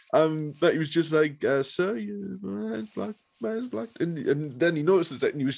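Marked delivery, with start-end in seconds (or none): 1.6-3.9 put-on soft, creaky Southern accent. Retelling Bubba's words after his hand is slammed in a door: Bubba's high-pitched Southern voice. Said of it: "that kind of high-pitched Southern voice".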